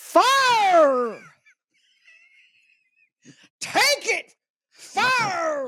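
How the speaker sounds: very high faith-healer cry, "fire" drawn out long. Teasing the other speaker by saying it as they would, imitating the listener's catchphrase. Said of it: "Or as you would say".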